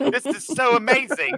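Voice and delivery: bad British accent, very high, drawn out. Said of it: "I can't do British accent".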